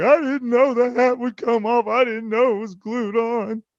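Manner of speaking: mock sobbing little boy voice, very high, pleading. Retelling how the child cried in the corner: imitating a crying child. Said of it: "and he's crying".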